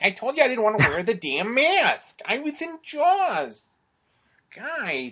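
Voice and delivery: deliberately bad, very high, very loud, stretched-out belting. Retelling a parody sketch about casting: bad Darrell Hammond as Richard Dreyfuss impression. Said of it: "my really bad impression of Daryl Hammond doing".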